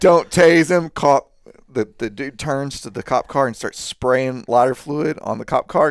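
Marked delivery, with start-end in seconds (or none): 0.0-0.9 put-on yell, pitched higher and louder. Retelling a cop warning another responding car: imitating someone yelling. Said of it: "he's yelling at another car".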